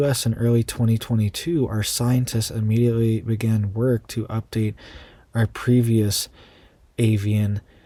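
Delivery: ordinary talk, nothing marked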